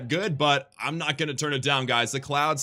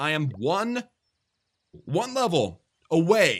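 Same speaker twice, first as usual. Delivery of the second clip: very slow, deliberately dragged out. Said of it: "I'm saying it slowly on purpose".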